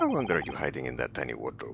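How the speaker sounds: put-on Russian accent in a low voice.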